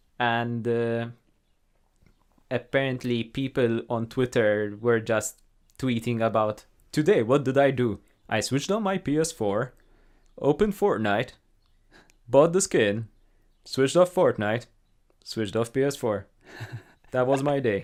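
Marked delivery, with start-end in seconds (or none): 7.2-17.8 fake American accent kept up throughout. Telling another speaker about his day, in a put-on american accent. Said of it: "That's a very good attempt to an American accent".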